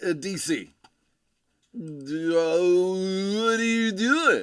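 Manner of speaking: put-on Californian accent, spoken very slowly. The speaker voicing a question the listener might ask them; Californian accent. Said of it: "That is my best Californian accent".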